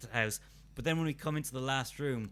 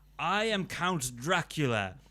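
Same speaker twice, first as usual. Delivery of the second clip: very slow, clumsy, bad fake American accent; 2 semitones higher, 3 dB louder than usual. Recounting an audio recording, imitating a romanian actor's bad american accent. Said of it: "three different Romanian actors doing American accents".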